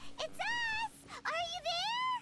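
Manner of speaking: calling out loudly in a high voice.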